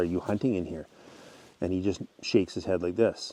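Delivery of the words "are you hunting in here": normal talking voice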